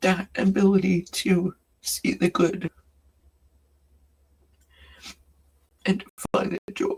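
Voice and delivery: tearful voice, crying while talking. Sharing a message about missing Austin, crying while talking. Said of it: "despite the fact that I'm crying".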